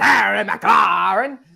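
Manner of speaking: slow, loud, belted mock Scottish accent. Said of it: "the Scottish laddie".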